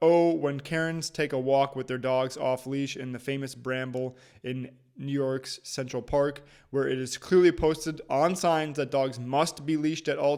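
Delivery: ordinary talk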